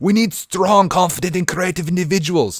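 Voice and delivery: put-on Russian accent. Speaker repeating their previous sentence, trying it in a Russian accent. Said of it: "I picture this in like uh, a Russian accent".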